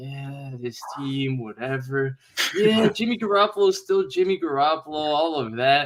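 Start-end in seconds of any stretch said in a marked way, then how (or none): 0.0-4.9 mock bored, indifferent, can't-be-bothered unexcited tone. Imitating the other speaker's words from last year: imitating someone unexcited. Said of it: "compared to last year when you were just like".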